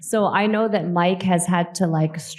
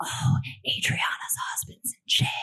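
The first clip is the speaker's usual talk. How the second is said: soft, whispered voice. Retelling overhearing someone in the elevator: imitating someone whispering. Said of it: "whispering in the elevator".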